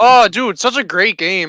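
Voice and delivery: sarcastic tone of voice. Reacting when another speaker brings up a disappointing game: sarcastic tone. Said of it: "I could hear the sarcasm in your voice".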